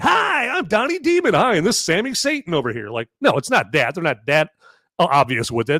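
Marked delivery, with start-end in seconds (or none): 0.0-2.9 put-on very high, swooping, sing-song kids' show voice. Joking about demons hosting a children's TV show: Sesame Street kids' show voice. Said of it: "you turn on Sesame Street like".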